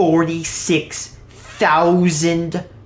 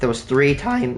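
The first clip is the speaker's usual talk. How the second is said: voice cracking; 4 dB quieter than usual. Working out crafting numbers in a game for viewers, voice cracking. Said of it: "that's bad voice crack".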